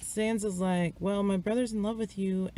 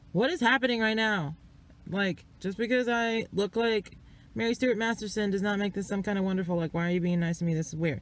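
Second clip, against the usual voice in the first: ordinary talk, nothing marked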